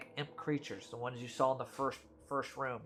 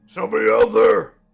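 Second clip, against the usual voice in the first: very loud, very high, shrill, rasping giant bellow; 10 semitones higher, 20 dB louder than usual. The narrator of the scene voices a giant answering the players' taunt: giant's voice. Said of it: "you hear a giant go".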